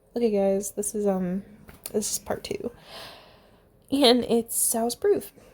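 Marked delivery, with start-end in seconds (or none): 3.9-5.3 voice cracking up mid-phrase, louder. Introducing part two of a story, the speaker's voice cracks. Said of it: "Oh my god, voice crack".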